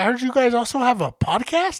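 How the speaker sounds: ordinary delivery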